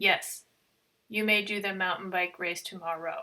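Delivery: put-on flat, one-note monotone. Speaker retells a technician's answer to them, imitating a monotone voice. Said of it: "In a very monotone voice".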